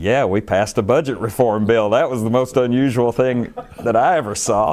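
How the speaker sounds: somewhat sarcastic tone. Retelling own answer to an investigator's question: retelling a sarcastic reply. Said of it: "somewhat sarcastically saying".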